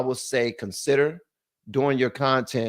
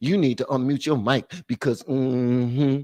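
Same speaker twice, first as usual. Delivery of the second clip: attitude-filled voice, drawn-out mm-hmm.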